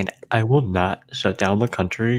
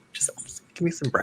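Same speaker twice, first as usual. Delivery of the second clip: play-acted meek, small, breathy, intimidated voice; 8 semitones higher, 8 dB quieter than usual. Retelling being asked which toast he wanted, imitating his intimidated self. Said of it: "I was like intimidated".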